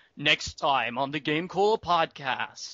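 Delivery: slow, ominous announcing tone. Showing the podcast ending bit: Dragon Ball Z announcer voice. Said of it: "like, the Dragon Ball Z announcer".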